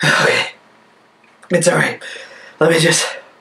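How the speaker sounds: out of breath, panting, catching breath. Pausing mid-video to catch their breath, out of breath. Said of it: "give me a sec to catch my breath".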